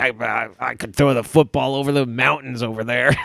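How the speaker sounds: washed-up, bragging has-been voice. Joking about pulling out really old links: Uncle Rico voice. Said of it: "Uncle Rico style".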